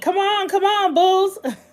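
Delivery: play-acted, very high, cheering holler. Retelling hollering at the tv during a bulls game: imitating own hollering. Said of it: "I was hollering at the T V".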